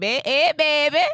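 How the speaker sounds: put-on Louisiana Creole accent. Retelling how people in Louisiana greeted Josh: imitating a Louisiana Creole accent. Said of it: "They got that accent down there".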